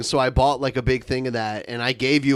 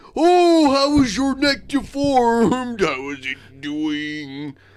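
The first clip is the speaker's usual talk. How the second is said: mock drunk voice, higher; 10 semitones higher, 3 dB louder than usual. Retelling what a streamer said one night: imitating someone drunk. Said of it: "he was like".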